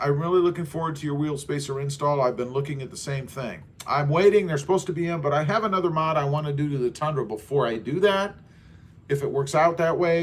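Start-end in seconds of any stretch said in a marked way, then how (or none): none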